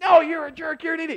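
shrill, very high screaming. Retelling a high school argument: imitating someone screaming. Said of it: "the one guy was screaming".

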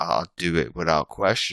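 ordinary delivery

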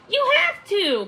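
very high, loud, snappy voice. A companion answers a friend who cries that she can't do it; retorting. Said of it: "Puffin retorted".

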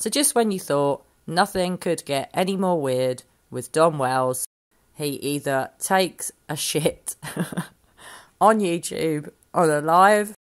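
giggling through the words, barely holding it together. Updating viewers on a YouTuber's latest incident, laughing while talking. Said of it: "I can't stop laughing".

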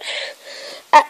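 ordinary delivery

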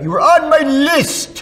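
very high, loud, stretched-out holler. Recalling a drunk comic book guy calling out to people, retelling his yell. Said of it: "He would yell out".

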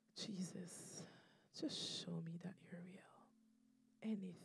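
acted whispering. Retelling a prayer whispered while driving with loud music on, retelling a whispered prayer. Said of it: "I'm just whispering".

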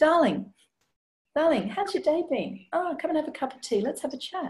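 mild, soft opening. Showing how to open an emotionally challenging conversation: a gentle intro. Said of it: "start with a gentle intro".

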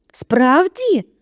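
eager, high-pitched exclamation. In a read story, Mr. Weasley answers Harry through the boarded fireplace, excitedly exclaiming. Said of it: "схвильовано вигукнув містер Візлі".

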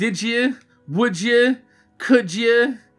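New Jersey accent on did you and would you. Demonstrating how people with their own accent say such phrases, New Jersey accent. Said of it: "mixes well with my Jersey accent".

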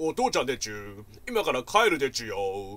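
put-on loud, strange, lisping old man's baby talk. Speaker retells an unknown man's voice she overheard: strange dad's baby-talk voice. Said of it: "知らねえ親父の声で".

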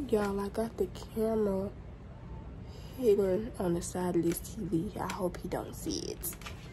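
hushed.

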